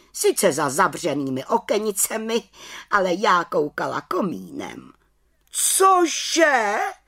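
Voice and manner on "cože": high exclaimed outcry in a witch voice. Narrator reads the chief witch reacting to an aunt's report, exclaiming. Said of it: "Vykřikla vrchní čarodějnice".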